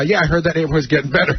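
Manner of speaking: usual speaking voice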